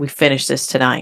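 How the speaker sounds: ordinary talk, nothing marked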